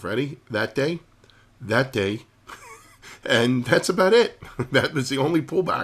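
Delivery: high voice, laughing through the words. Speaker shows viewers the only pullback in this move, laughing while talking. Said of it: "I'm sorry, I'm laughing".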